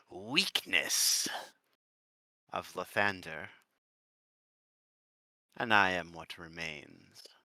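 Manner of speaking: burning, fierce, dead-serious, intense delivery. Speaker voices a character's declaration: really intense. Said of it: "turn like really fucking intense as he says".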